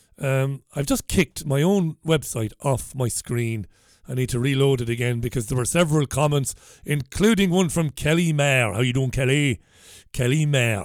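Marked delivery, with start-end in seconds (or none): 8.7-10.9 over-the-top, exaggerated Irish brogue. Host greeting a commenter by name, in an exaggerated irish accent. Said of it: "Why are you doing the exaggerated Irish accent".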